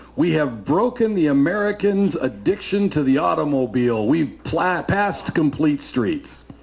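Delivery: acted gleeful, boastful gloating tone. Recalling a council member smacking the gavel: mock-gleeful, boastful voice. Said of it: "with glee and a boastful voice".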